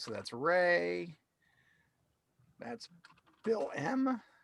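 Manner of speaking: soft voice cracking, name drawn out. Sorting out people's names and who is in which group, voice cracking. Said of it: "my voice just cracked there".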